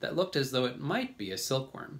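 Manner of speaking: ordinary delivery, nothing marked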